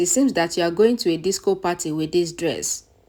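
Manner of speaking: ordinary delivery, nothing marked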